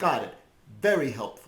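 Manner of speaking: sarcastic. Reacting to the recap just given, sarcastic. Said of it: "I'm sensing some sarcasm".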